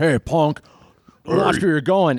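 hulking, menacing wrestler-type tough guy voice. Voicing a giant frog-like creature who just bumped someone: voicing a giant frog creature. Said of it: "he's like".

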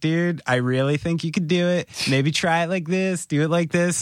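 mock laid-back, super calm, cool, easygoing tone. Retelling how a bandmate coached a hard beat: imitating Jeff, super calm and cool. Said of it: "super calm and cool".

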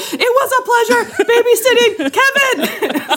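put-on yelled German accent, very high. Recalling a TV comedy sketch and quoting it, yelling in a German accent. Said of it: "people in a German accent yelling like".

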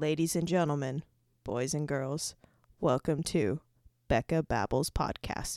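put-on event announcer voice. A podcast host gives the show a spicy extra intro in an announcer voice. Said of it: "I needed to be an announcer for a sec".

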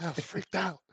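all hushed, half-whispering voice. Retelling how a friend admitted being scared: imitating someone half-whispering. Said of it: "He's all whispering".

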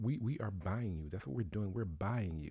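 put-on calm tone. Retelling what a man on an episode said to two women, imitating a calm statement. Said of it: "He said it so calmly too".

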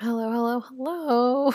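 creepy, scary, croaky voice. Podcast host with a sore throat greets listeners, scary croak. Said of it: "that scary croak".

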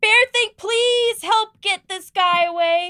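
shrill, very high-pitched yell. Calling to the bear companion to help in a fight: yelling for help. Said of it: "I'm gonna yell".

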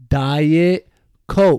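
mock slow, forceful delivery. Retelling how a kid server said the drink name: imitating slow, forceful delivery. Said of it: "saying it slow, like, con fuerza".

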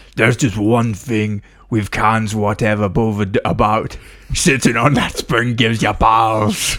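put-on orc-style voice. Voicing an orc character's line: orc voice. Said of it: "why do orcs talk like that".

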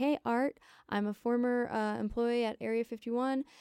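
panicky, terrified, frantic and worried voice. Retelling a caller's words to a radio show: imitating a frantic, hurried caller. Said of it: "sounded really frantic".

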